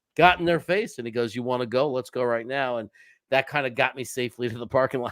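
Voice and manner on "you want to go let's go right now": put-on aggressive, challenging tough-guy tone. Retelling how a tough guy confronted Jet fans: imitating an aggressive challenge. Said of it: "super aggressive".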